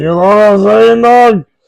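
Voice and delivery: very loud, high-pitched, belted-out holler. Doing a Joey Coco Diaz impression. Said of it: "That's my, uh, Joey Coco Diaz impression".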